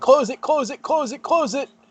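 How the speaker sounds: high-pitched screaming, same words over and over. Describing what Dovin will do as the room thaws, imitating Dovin screaming. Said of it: "just start screaming".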